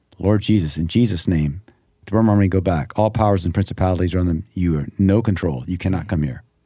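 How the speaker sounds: usual speaking voice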